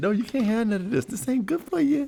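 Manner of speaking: stern, firm parental scolding tone. Mocking a friend's refusal as if telling a kid: imitating a parent scolding a kid. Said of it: "It's like telling the kid".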